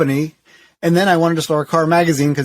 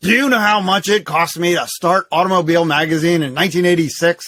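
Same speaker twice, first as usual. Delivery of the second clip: put-on gruff voice. Retelling a phone call with the magazine founder: gruff voice imitating David E. Davis. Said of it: "in his gruff voice answering my".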